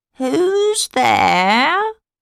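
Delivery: hoarse wolf voice. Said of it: "Asked the wolf in his hoarse voice".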